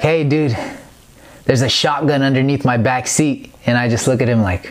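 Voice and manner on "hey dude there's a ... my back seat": plain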